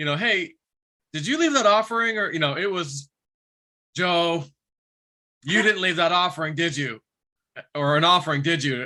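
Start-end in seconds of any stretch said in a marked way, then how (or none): 4.0-8.9 put-on scolding voice. Mimicking how the other person asked Joe about the offering, imitating a scolding tone. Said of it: "In kind of a scolding tone".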